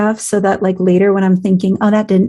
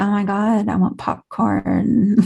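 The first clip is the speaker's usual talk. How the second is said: put-on stoned voice, much slower; 5 dB quieter than usual. Describing what happens when getting stoned, acting stoned. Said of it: "I'll get stoned and I'll be like".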